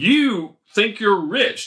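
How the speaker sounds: high, biting, laid-on mock sarcasm. Quoting the apostle's letter to the church in Corinth, with very sarcastic delivery. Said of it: "He's being very sarcastic".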